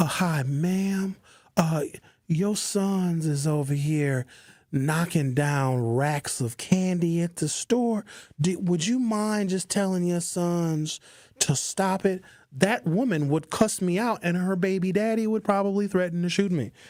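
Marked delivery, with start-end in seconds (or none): 0.0-12.2 kind, careful, slow, sweet gentle tone. Acting out asking a mother in a store to stop her sons: kindest, softest, most gentle tone. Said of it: "in my kindest, sweetest, softest, most gentle tone".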